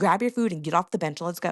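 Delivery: ordinary delivery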